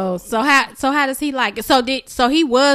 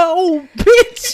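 cussing-out tone, higher and louder; 4 semitones higher, 5 dB louder than usual. Imitating a child alone behind a closed door: imitating someone cussing out. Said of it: "Cussing you out".

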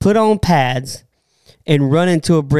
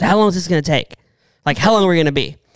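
put-on cranky voice; 2 semitones higher than usual. Retelling what Jake Plummer asked before going live: imitating Jake Plummer sounding cranky. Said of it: "You make him sound cranky".

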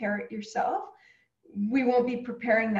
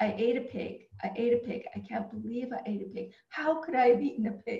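ordinary delivery

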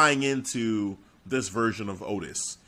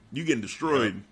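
ordinary talk

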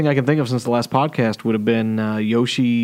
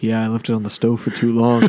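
put-on calm radio-show voice. Retelling an SNL radio-show skit, imitating Pete Schweddy's calm talk. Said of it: "very calmly talking the whole time like this".

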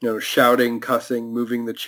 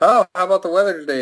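play-acted raised, overly loud, rushed, high-pitched chatter; 8 semitones higher, 3 dB louder than usual. Imagining a man making small talk in front of a cop visiting his house: loud voice. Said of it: "in a loud voice".

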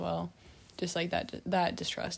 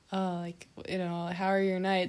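mock slurred, erratic speech. Retelling what a stranger in the backyard said: imitating slurred erratic speech. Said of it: "maybe slurring his words, like, talking very erratically".

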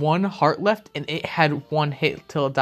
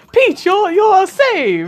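very high, loud, sing-song, swooping, slow drawn-out delivery; 8 dB louder than usual. Acting out a game scene, rescuing the princess: Mario impression. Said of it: "that was actually a pretty good Mario impression".

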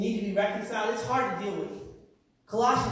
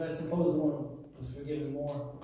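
grudging reply dripping with dry sarcasm; 7 semitones lower, 5 dB quieter than usual. Retelling a scripture scene, voicing the host's reply: acting out a sarcastic reply. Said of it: "he says it sarcastically".

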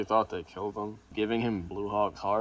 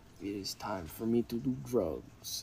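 bad, failed, fake French accent; 4 dB quieter than usual. Speaker discussing the show quotes Frenchie's scene, in a bad Frenchie impression. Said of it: "That's not a French accent".

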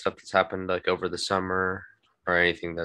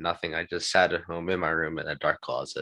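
plain

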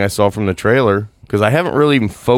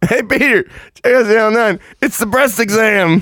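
play-acted, very high, excited yell, projected far; 13 semitones higher than usual. Recapping a scene where a man calls to Peter: retelling a yell across the room. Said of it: "as he yells across the room".

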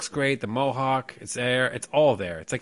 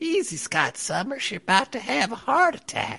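put-on very high-pitched elderly old lady voice; 11 semitones higher than usual. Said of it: "It sounded like an old lady".

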